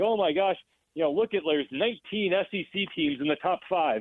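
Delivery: ordinary talk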